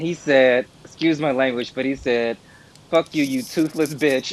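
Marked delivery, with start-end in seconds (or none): 2.9-4.3 imitated angry old man voice, furious outburst. Retelling what an old man in line said to a woman: imitating an angry old man. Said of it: "this old man got so mad at this woman".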